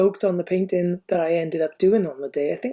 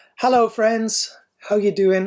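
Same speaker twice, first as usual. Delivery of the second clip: loud, hollered shouting voice; 3 semitones higher than usual. Greeting viewers at the start of a subscription tutorial video, shouting. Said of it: "I don't know why I'm shouting".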